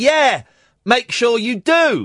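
slow, drawn-out, put-on woman's tone. Retelling what a woman in the park said: imitating the woman's tone. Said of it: "The tone I am putting in my voice is the tone that she had".

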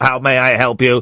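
flat, mechanical robot voice.

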